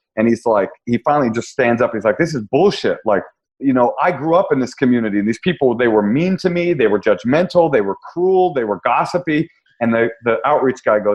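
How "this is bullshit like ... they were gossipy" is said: usual speaking voice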